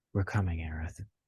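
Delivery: put-on character voice, muttered. Narrating a game, the speaker voices Tifa's line: Tifa muttering under her breath. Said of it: "say under her breath".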